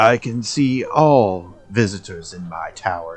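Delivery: disembodied voice speaking from afar. Voicing the tower's owner speaking to visitors through a rune: tower owner's voice through a rune. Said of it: "You hear a voice speaking to you through the rune".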